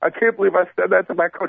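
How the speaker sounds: weepy, tearful voice, crying. Retelling what a buddy said to his coach: imitating someone in tears. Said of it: "in tears".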